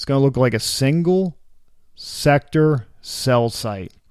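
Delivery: very slow, careful, drawn-out word-by-word delivery. Explaining what a mini macro is, said slowly. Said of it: "I had to say it slow".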